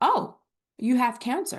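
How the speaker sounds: play-acted calm, composed, unflustered, matter-of-fact tone. Retelling the husband's reaction to the diagnosis, imitating a calm voice. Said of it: "he looked at me and said so calmly".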